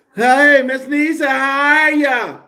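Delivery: very high, overdone, too-loud, drawn-out talk. Speaker apologizes for talking too loud, then imitating own too-loud talking. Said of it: "I'm sitting up here talking like".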